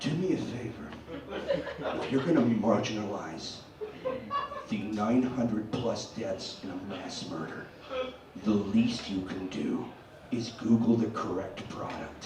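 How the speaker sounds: gentlest soft-spoken voice, very low murmur. Telling listeners what to say to someone, in the most gentle voice. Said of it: "in the most gentle voice you can muster".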